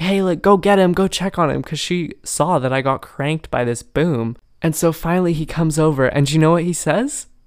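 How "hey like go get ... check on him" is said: put-on loud calling-out yell. Retelling how mom on the shore called to the instructor: imitating mom yelling. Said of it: "she starts yelling at the guy".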